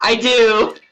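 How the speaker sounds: sounding very happy. Answering whether you have improved multiple strike, sounding so happy. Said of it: "Sounded so happy when you said that".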